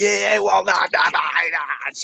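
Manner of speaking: heated, hoarse, creaky yell held small. Retelling how he screamed at a guy in front of the camera: imitating someone screaming. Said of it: "he's just screaming at the guy".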